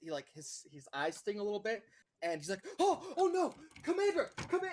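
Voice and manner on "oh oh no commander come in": alarmed shout, higher and louder. Voicing a guard who sees the torches turn green: guard shouting in alarm. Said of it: "And you hear the shout".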